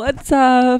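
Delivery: strained, trying-too-hard, loud, forced cheerful voice, acted. Mimicking the other speaker's tired intro: imitating a forced upbeat greeting. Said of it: "You're like".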